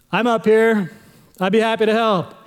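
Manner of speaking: acted big godlike voice, calling down from above. Telling a joke, voicing god answering a man from above: big booming voice. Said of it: "he hears a big booming voice".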